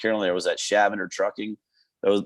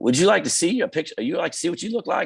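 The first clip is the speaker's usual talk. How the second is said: put-on Eastern North Carolina Southern accent, pitched higher; 9 semitones higher than usual. Retelling what the nurse said after stitching up: Faye's deep Eastern North Carolina Southern accent. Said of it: "in her deep, you know, Eastern North Carolina Southern accent".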